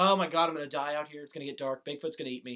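acted-out tearful, panicked crying. Retelling being unable to find Dad out there, retelling crying in panic. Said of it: "I'm crying. I'm like".

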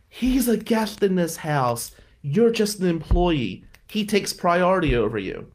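mock enraged priest voice, high furious screaming. Retelling how Father Sullivan screamed at him over the remote: imitating Father Sullivan screaming. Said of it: "he's screaming at me".

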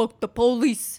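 attempted Brooklyn accent, mock tough. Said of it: "is that how a Brooklyn accent sounds".

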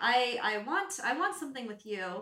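usual speaking voice

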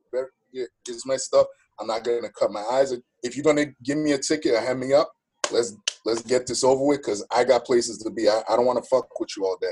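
usual speaking voice

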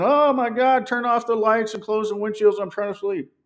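small, restrained, contained scream. Retelling being woken by lights and open curtains: imitating someone screaming. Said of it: "you start screaming".

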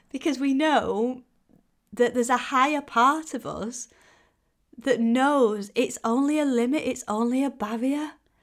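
emotional, on the edge of tears. Speaking to listeners and getting teary mid-thought. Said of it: "I'm getting all teary".

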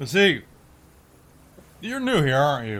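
put-on drunk-sounding character voice.

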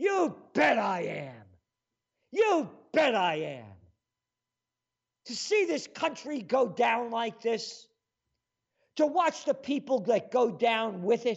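furious, indignant, heated angry outburst. Answering an imagined critic who tells him to calm down: angry. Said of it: "You're so angry".

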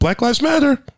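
acted, very high little kid's yell. Retelling what a six-year-old on the street said: imitating a kid shouting.

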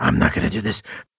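growling put-on character voice.

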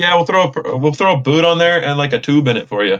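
put-on heavy Canadian accent. Retelling what a mechanic said about fixing a tire: heavy Canadian accent. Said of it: "the heaviest, like, Canadian, like, American accent ever".

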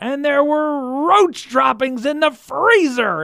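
put-on fired up, almost angry, very high and loud. Imitating a man with an amazing way of talking: mock-pumped, almost angry. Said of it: "he would just get super pumped and like almost like angry".

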